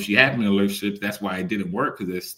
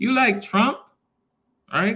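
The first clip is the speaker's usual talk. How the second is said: very high-pitched woman's voice; 14 semitones higher than usual. Retelling a Reddit video, quoting a stranger addressing a man; higher-pitched voice. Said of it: "in a higher pitched voice was like".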